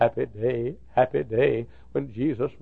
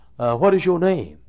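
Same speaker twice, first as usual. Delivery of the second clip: raised, laid-on Southern drawl; 4 semitones higher, 6 dB louder than usual.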